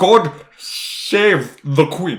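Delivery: very slow, dragged-out, strained s sounds. Showing how Bond fights the S in the toast: James Bond accent. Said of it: "trying to make an S sound".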